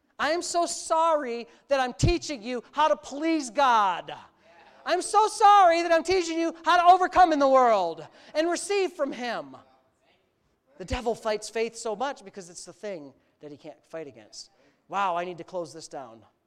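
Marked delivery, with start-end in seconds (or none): 0.2-9.6 acted heavy sarcasm, slow, raised pitch. A preacher retelling what he said sarcastically in the first service, retelling own sarcastic remark.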